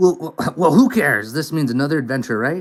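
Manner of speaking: put-on gravelly voice. Reading Susie's game line aloud: rough and gruff Susie voice. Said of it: "I'm rough and gruff".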